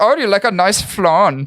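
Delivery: put-on Swedish accent. Repeating what they said a moment ago, in a swedish accent. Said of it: "I did that in a Swedish voice".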